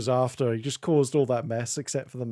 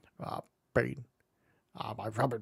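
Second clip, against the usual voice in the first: rough, creaky, croaking comic voice; 7 dB quieter than usual. Quoting lines from episodes of the show: Mr. Bean voice. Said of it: "there have been episodes where he goes like".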